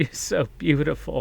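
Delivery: words sobbed through tears. Retelling what a stranger said in a bar bathroom: imitating someone crying. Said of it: "just started crying and went".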